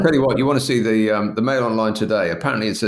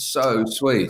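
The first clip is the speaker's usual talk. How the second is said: ordinary talk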